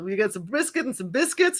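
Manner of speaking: put-on American accent. Retelling an exchange, quoting their own past reply in a pretend american accent. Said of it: "the pretend American accent going".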